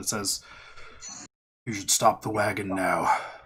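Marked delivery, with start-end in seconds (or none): 1.6-3.2 big, burly booming voice, lower pitch. Game narrator voicing someone at the front calling to the wagon, in a burly booming voice. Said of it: "a very burly voice booms out".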